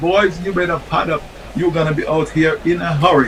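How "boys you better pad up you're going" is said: usual speaking voice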